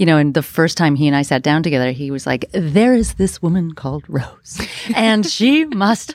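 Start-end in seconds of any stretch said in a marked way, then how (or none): 2.5-6.1 put-on determined voice, slow. Retelling a first meeting with George: imitating George. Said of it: "Does he talk like that?".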